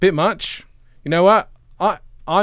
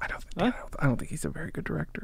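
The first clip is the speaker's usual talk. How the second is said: whispering into microphone, quieter; 12 dB quieter than usual. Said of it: "you're whispering into the microphone".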